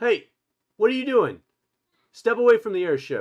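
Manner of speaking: very loud, very high, swooping shout. Game narrator voicing a guard who spots the player near the airship, guard yelling. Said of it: "One of the guards yells from above you".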